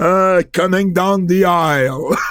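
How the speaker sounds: put-on big arena-style voice. Joking in conversation about Howard Finkel, put on Howard Finkel's big Madison Square Garden voice. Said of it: "grosse voix de Madison Square Garden".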